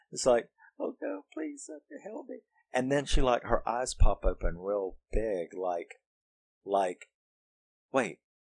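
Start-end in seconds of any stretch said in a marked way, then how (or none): 0.7-2.3 mealy little voice, very high and very soft. Speaker acting out a woman turning around to speak, mealy quiet voice. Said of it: "says like a couple of sentences in that mealy, quiet voice".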